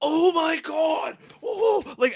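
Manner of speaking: overacted, very high, very slow, overexcited gushing. Criticizing a woman's overacting, the speaker mimics her overexcited gushing. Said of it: "overexcited about everything and just like".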